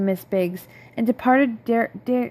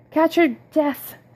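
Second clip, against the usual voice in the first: high, croaking voice; 5 semitones higher than usual. Miss Biggs warns a soaked Polly from the background: Miss Biggs croaking. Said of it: "croaked Miss Biggs".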